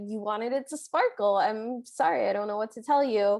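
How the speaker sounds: usual speaking voice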